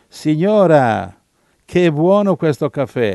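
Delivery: loud, slow, drawn-out hollered delivery. Retelling shouting to the landlady over two people shouting nearby, retelling a shout. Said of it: "mi sono messo a gridare e gli ho detto".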